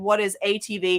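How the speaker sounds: plain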